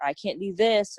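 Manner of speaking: ordinary talk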